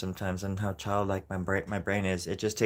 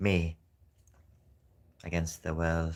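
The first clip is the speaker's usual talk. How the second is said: slow, mechanical, robotic cyborg voice; 3 semitones lower than usual. Saying a short line in a put-on voice: talking like a cyborg. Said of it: "Why am I talking like a cyborg?".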